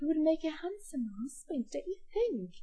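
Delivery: high, soft, confiding half-whisper. The queen speaks to Cecile about Jack, half-whispered. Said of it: "whispered the queen to Cecile".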